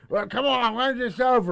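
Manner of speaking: impatient, loud, high heckling call. Retelling how rowdy dudes heckled at a comedy show: imitating heckling. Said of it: "heckle a little bit".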